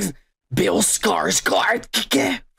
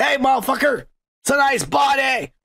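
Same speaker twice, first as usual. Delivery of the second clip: hollered, high, drawn-out yell; 6 semitones higher than usual. Retelling calling out a car window to a jogger: retelling a yell. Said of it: "I yelled at the motherfucker".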